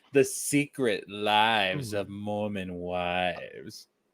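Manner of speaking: very slow, sensual, sultry voice, "wives" drawn out. Saying a show title the way it should sound: saying it all sensual. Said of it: "you gotta say it all sensual and stuff".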